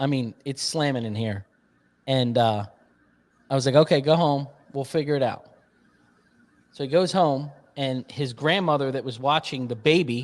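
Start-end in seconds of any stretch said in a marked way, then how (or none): none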